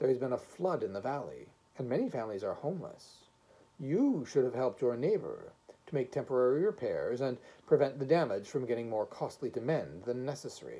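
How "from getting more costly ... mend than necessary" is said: ordinary delivery, nothing marked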